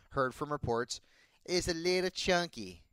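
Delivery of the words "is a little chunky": bad put-on voice, pitched high, dragged out. Discussing a running back's weight from reports, Cartman voice. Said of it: "trying to get my Cartman out there".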